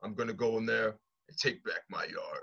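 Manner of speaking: low, dead-level monotone promo voice. Mocking a wrestler's mic work: flat Roman Reigns impression. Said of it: "it's just one flat thing".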